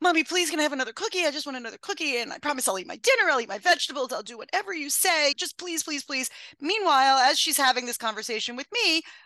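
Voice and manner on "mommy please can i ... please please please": put-on little girl's pleading, wheedling, begging voice. Retelling how a three- or four-year-old asked for another cookie: imitating Aviva begging. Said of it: "Aviva was maybe three or four and would say".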